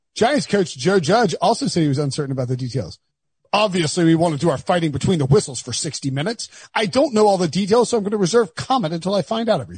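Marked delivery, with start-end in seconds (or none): 3.6-9.8 put-on British accent, fancier at the end. Reading a coach's post-game quote aloud: Joe Judge impression sounding British. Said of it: "Is he English?".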